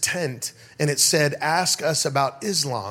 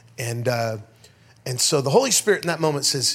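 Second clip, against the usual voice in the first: ordinary talk, nothing marked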